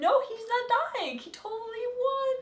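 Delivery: high, rising, panicked, disbelieving voice.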